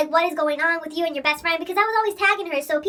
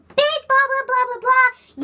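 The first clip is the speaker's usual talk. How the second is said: high, loud, drawn-out yelling; 7 semitones higher, 5 dB louder than usual. Retelling a girl coming at the speaker in a school hallway, imitating someone yelling. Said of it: "she starts yelling".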